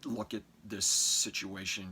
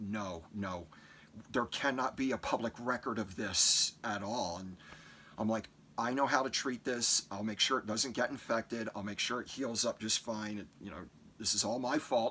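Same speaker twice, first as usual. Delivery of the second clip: usual speaking voice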